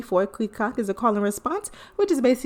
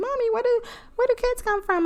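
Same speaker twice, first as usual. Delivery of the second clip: put-on very high, curious little kid voice. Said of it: "they ask you".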